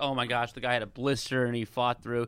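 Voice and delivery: normal talking voice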